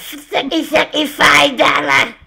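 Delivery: high-pitched, pushed-up cartoon character voice. Asked to say it again, the speaker does a Cartman impression. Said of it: "I can kind of do it".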